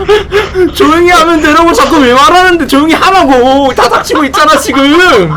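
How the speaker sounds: exasperated, high, loud laughing yell.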